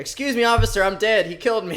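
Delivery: woman's voice. Imagining what the woman in the video tells the police officer: imitating the woman. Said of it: "What's she gonna say when the cop gets there?".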